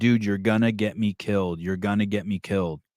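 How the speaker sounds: usual speaking voice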